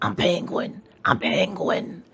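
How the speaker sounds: raspy put-on character voice, rasp on every word. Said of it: "when I do the raspy voice".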